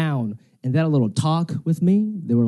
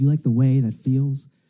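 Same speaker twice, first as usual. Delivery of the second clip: very sexy, sultry, seductive delivery; 3 semitones lower than usual. Retelling what a date said while dancing: imitating a sexy way of speaking. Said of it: "she says to me in a very sexy way".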